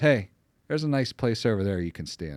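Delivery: ordinary delivery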